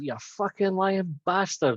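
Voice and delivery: put-on furious yell, high and drawn out. Describing watching Prime Minister's Questions, speaker retells a shout at the TV. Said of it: "I just shouted out".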